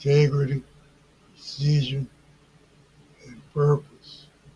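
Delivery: integrity, precision and purpose each given emphasis.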